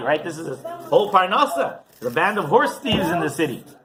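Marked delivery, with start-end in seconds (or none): none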